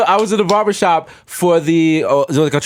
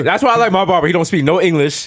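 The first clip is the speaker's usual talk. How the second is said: normal talking voice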